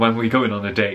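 ordinary delivery

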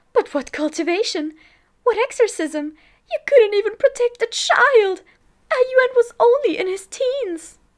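very high, very loud, shrill, rising shriek. Narrating, Lady Mo charges at Lan Sijue and the cultivators, screeching. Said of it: "[name] shrieked, "My son died a terrible death tonight! I must avenge him! What are you doing? Why are you trying to stop me?"".

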